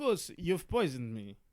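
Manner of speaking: slow, eerie, creepy undead-sounding vampire voice. Retelling a poisoned cartel boss's words to Gus, in a Nosferatu-like creepy voice. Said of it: "Why does he sound kind of like Nosferatu?".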